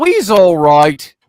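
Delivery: put-on loud, almost Cockney, East London accent. Quoting an EVP captured on the radio show, in a near-Cockney accent. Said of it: "in a almost a Cockney accent, ... just like that".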